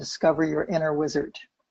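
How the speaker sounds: usual speaking voice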